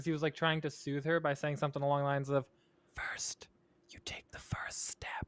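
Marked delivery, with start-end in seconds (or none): 3.0-5.3 put-on whisper, quieter. Retelling a man soothing someone over the phone: imitating someone whispering. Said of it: "he was whispering to her over the phone".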